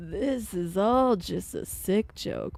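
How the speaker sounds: put-on old person voice. Repeating the complaint they just made, this time as an old person: old person voice. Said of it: "Saying that as an old person".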